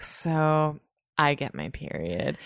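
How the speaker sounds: put-on condescending, lording-it-over drawl, very slow. Retelling how a close friend announced her period: imitating condescending friend. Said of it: "very, like, condescending".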